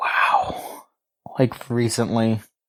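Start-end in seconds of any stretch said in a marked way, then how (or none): 0.0-0.8 whispered. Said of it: "sit there and go like".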